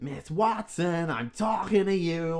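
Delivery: put-on loud, drawn-out, full-on New York accent. Retelling a guy from a greasy spoon calling to miss watson: full new york accent. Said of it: "in full New York mode".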